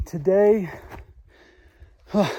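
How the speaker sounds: winded, huffing and puffing. Hiker describing the day's route to the listener, out of breath, huffing and puffing. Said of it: "I'm puffing and huffing and puffing".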